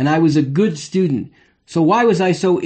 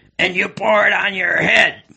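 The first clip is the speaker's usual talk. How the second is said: low, insinuating, sly, mischievous frog voice. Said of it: "in this low, insinuating, mischievous voice".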